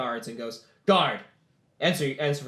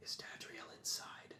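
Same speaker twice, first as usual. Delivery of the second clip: hushed whisper, close to the ear. Voicing a general who leans to a player's ear: whispering. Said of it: "you hear him whisper".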